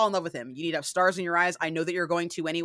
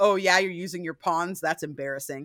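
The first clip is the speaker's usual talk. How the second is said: put-on teasing vampire voice. Retelling a chess scene, quoting the winning player's opponent: imitating Lestat teasing. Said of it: "he's teasing her the entire time".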